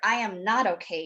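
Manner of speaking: ordinary talk, nothing marked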